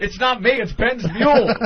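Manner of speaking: high, loud, mocking, protesting tone.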